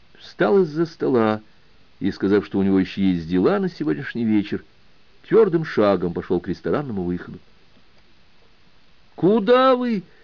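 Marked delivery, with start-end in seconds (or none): 9.1-10.0 very high-pitched, loud shout. Narrator reads Akhmedzyanov as the student Mikhailov walks out, shouting after him. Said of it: "крикнул вдогонку Ахмедзянов".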